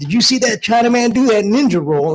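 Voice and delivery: high, loud woman's shout, called out.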